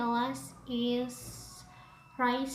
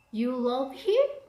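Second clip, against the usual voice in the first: extra rising tune, ending sharply on "him"; 6 dB louder than usual. Intonation example of disbelief or surprise, sharp rise on him. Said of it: "extra rising intonation".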